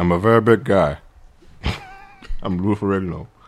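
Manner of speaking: low, muffled, cotton-mouthed voice with mushed words. Performing a bit for the others, a muffled Lou Ferrigno impression. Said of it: "Could you have more cotton in your mouth?".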